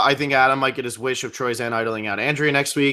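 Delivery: ordinary talk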